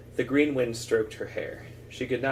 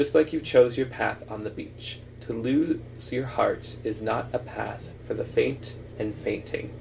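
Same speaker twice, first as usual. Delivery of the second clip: plain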